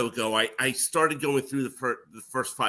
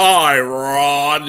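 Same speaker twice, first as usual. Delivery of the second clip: booming loud voice with one word drawn out; 2 semitones higher, 12 dB louder than usual. Recalling being greeted in the hall: booming Don Pardo voice. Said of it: "in that booming voice of his".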